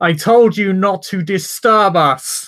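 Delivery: put-on very loud, high shout in an old king voice. An old man in royal garb shouts at his advisor and everyone present: old king shouting. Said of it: "as he just shouts".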